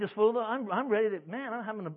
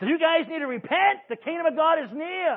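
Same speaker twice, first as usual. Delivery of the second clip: loud, raised, pitched-up call; 7 semitones higher, 7 dB louder than usual. Retelling calling on people to repent, in a raised voice. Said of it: "I just raised my voice".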